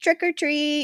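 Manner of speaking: put-on very high, cute toddler voice. A mother retells her little daughter thanking people on Halloween, little baby voice. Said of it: "she says it in her little baby way".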